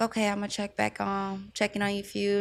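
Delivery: ordinary talk, nothing marked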